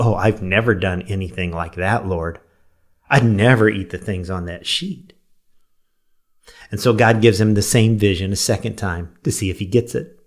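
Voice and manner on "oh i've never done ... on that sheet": prideful, smug, self-righteous, holier-than-thou tone. Retelling Acts, acting out Peter's reply to the Lord, in mock self-righteous pride. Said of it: "hear the self-righteous pride in his voice".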